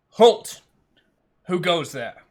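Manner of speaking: commanding, loud calling out. Voicing a guard calling out to intruders: in-character guard call. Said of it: "a voice calls out".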